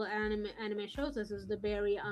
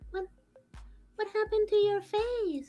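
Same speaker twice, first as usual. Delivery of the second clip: put-on very high little-kid voice; 12 semitones higher, 6 dB louder than usual. Retelling an anime scene, imitating the younger sister: a child's voice. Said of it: "this voice where, like, you, okay, there, th-, that's, that's a child".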